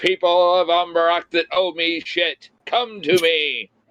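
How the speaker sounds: grand, formal proclamation voice, like a royal decree. Reading a scroll aloud to summon people: reading like a proclamation. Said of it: "I read it like a proclamation".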